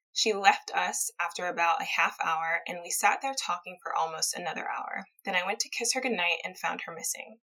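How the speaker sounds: plain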